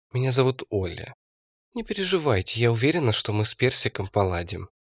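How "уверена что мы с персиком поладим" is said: ordinary delivery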